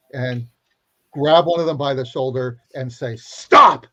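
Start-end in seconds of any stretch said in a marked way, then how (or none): 3.1-3.7 very loud, high-pitched, authoritative, commanding tone. Grabbing someone by the shoulder to stop a ritual: commanding voice. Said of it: "in a commanding voice".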